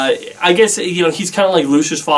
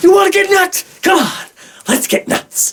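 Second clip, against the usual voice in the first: manic delivery pitched very high. Comparing actors who played Batman, doing a manic Michael Keaton impression. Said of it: "Michael Keaton is more manic".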